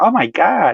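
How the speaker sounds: put-on American accent. Retelling what a convert said at the Hajj: imitating an American accent. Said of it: "in American accent".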